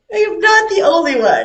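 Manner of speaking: high, loud mock wailing cry.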